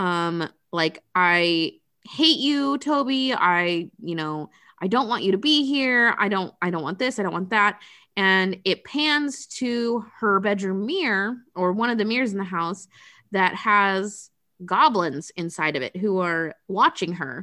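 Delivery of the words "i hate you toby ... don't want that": put-on upset outburst. Retelling a movie scene where she yells at the baby: imitating someone upset. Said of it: "she gets so upset that she starts".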